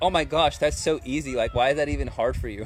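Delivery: plain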